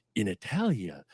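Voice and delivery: very low, deep, mysterious, ominous narrator voice. Imitating a narrator opening a segment of Ripley's Believe It or Not: Jack Palance narrator voice. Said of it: "he would just start off with that Jack Palance".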